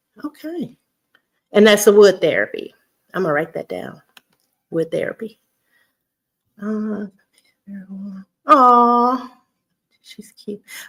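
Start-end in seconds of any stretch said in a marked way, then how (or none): 10.0-10.6 very soft whisper. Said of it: "Why am I whispering to myself?".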